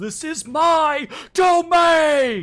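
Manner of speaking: very loud, high, slow howl. Voicing a hag whose voice shifts up an octave: howling, voice shifted up an octave. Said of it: "her voice shifts up an octave, and she just howls".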